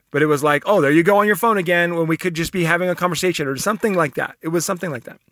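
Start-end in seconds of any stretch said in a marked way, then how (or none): none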